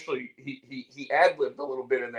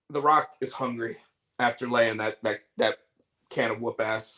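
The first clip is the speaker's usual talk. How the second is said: usual speaking voice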